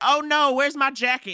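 put-on alarm, feigned fluster, high pitch. Retelling how Steve acted at the bar bill: imitating Steve's fake panic. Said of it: "He's like".

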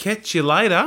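put-on Australian accent. Asked how to say goodbye in Australian, answering in an Australian accent. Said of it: "saying goodbyes in an Australian accent".

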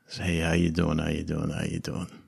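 hushed, tiny, very quiet little voice. Narrator voices someone speaking in a player's ear, very quiet little voice. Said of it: "you hear a very very quiet little voice in your ear".

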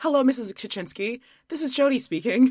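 put-on anxious, careful, polite nervous voice. Retelling greeting the other speaker's mom on the phone, imitating own nervous greeting. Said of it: "so nervous".

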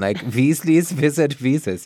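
put-on German accent. Trying out a tongue-twister title by reading it in a german accent. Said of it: "Maybe if we read it in a German accent".

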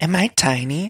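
high flirty voice. Retelling how Ramona got flirty with a tall guy: imitating Ramona flirting. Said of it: "Ramona got all flirty with him".

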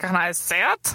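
put-on slightly drunk-sounding speech. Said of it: "please read this as if you're a little drunk".

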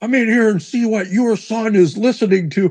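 outraged, very high, angry yelling. Retelling how dad yelled for mom about the record: imitating dad yelling. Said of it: "he's yelling for my mom".

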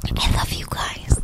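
soft, breathy, barely voiced whisper. In a group conversation, a warm line said whispered. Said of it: "I'm going to slip into my NPR voice for this. / Why are you whispering it?".

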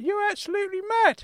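put-on high angry elderly male voice. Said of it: "Uncle Claude has got so angry".

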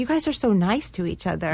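ordinary talk

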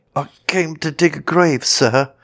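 faltering stuttering. Reading a story aloud, voicing the man answering the goblin, stammering. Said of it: "stammered Gabriel Grubb".

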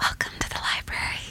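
soft, breathy, seductive whispered ASMR voice. Imitating a man in an ASMR sleep story, in a mock-sexy voice. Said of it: "that was quite sexy".

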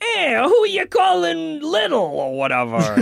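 annoying sidekick voice, very high, swooping and raspy. Complaining about a game's annoying sidekick who never stops talking, Daxter voice. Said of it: "He talks like this!".

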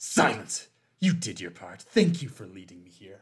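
low, theatrical, menacing, dramatic villain voice. Voicing a figure who silences someone and stabs them: dramatic villain voice. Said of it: "that was a little dramatic".

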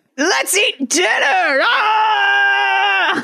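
very slow, high, stretched-out screaming. Retelling a cartoon scene, quoting the beast: imitating the beast screaming. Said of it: "the beast enters and just starts screaming".

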